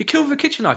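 put-on panicked quick delivery. Describing how a woman delivered her line in a scene, imitating quick panicky delivery. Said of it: "She's so quickly, panically".

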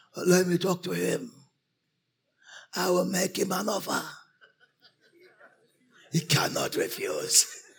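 speaking in an elder's voice. Retelling how a man who declared himself an elder spoke: imitating an elder's voice. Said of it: "he talked with an elder voice".

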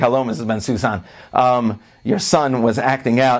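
plain

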